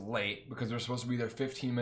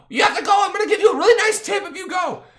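put-on shrill, impatient, very high, very loud drunken screaming; 16 dB louder than usual. Retelling how someone screamed at the Uber driver: retelling a drunk scream. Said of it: "Jen was screaming at this poor Uber driver".

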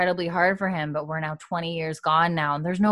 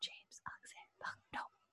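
put-on drunken whisper, quieter. Retelling a recording of trying to say names while drunk: imitating own drunken whisper. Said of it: "you can just hear me whisper".

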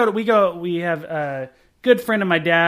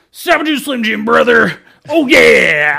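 rough, hyped-up, very loud belted yell; 5 semitones higher, 8 dB louder than usual. A man gets up in a restaurant so a lady believes him, loud Macho Man impression. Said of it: "Like real loud".

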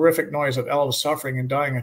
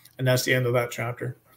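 plain

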